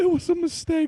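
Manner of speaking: very high, loud, tearful crying-laughing wail. Retelling a friend crying with laughter: imitating a friend crying with laughter. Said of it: "he's crying, going".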